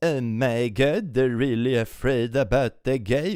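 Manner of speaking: sarcastic, mocking put-on Swedish accent. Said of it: "I did my sarcastic Swedish accent".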